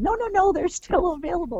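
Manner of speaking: high, insistent voice.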